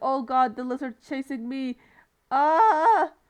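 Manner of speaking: sudden panicked cry ending in drawn-out ah. Retelling the moment of panicking while being chased: imitating own panic. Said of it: "Here I start just panicking".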